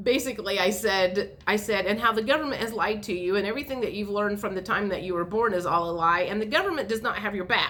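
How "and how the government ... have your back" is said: said as fast as possible, rattled off. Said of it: "trying to say it as fast as I could".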